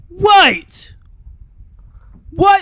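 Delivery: sudden, loud, very high British accent. Reacting to a reveal about Ken's father: accidental British accent. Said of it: "I didn't mean to sound British just then".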